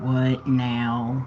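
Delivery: low, dragging cartoon voice, "now" drawn out. Guessing what someone is thinking, the speaker answers in an Eeyore voice. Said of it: "In his Eeyore voice".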